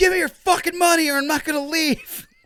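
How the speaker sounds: very high, loud yelling. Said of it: "just yell, like".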